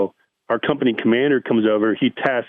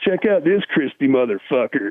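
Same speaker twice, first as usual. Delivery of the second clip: stoner, burnout surfer dude voice; 3 semitones higher than usual. Retelling what a dude nicknamed Spicoli said when he got up there, imitating Spicoli. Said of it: "he talked like some burnout surfer dude".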